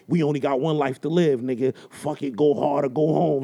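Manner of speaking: low, deep movie-trailer announcer voice. Retelling what he said on the phone, in a Bruce Willis trailer voice. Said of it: "Why was he talking like a Bruce Willis trailer?".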